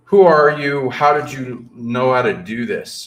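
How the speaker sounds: booming, loud security guard style voice. Retelling what the thing contacting him first asked: imitating a booming voice. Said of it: "in a kind of booming voice in a security kind of way".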